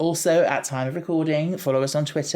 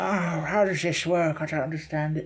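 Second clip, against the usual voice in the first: put-on elderly old grandpa voice; 2 semitones higher than usual. Picturing himself as an old grandpa looking at TikTok, old grandpa voice. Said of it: "like an old grandpa looking at TikTok and going like".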